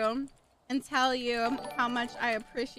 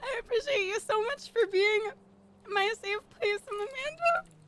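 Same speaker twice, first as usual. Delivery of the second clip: welling up, very high, emotional voice; 10 semitones higher than usual. Thanking a friend; getting emotional. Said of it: "Stop, I'm getting emotional".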